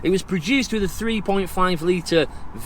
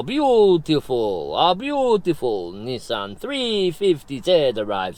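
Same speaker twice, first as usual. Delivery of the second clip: drifting into fake, sing-song Italian accent; 4 semitones lower than usual. Waiting on a sunny afternoon for a car to arrive, in a put-on italian accent. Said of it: "drifted into an Italian accent".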